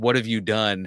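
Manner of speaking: ominous, dark, foreboding, menacing tone. Recapping a scene, acting out a character's line: mock-ominous. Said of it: "One ominous".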